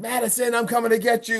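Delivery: acted-out, imitated screaming and yelling. Recounting a livestream where she screams at Madison: imitating someone screaming. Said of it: "she starts screaming, yelling like".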